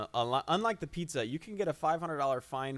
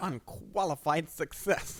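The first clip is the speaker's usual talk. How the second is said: put-on older, old-timer Southern accent; 3 semitones higher than usual. Podcaster summing up the first episode of Allen Nation, in a put-on older accent. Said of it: "Is that a Tommy Lee Jones impersonation?".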